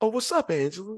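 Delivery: soft little voice. Acting out a movie character greeting Angela, in a little soft voice. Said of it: "he did it with his little soft voice".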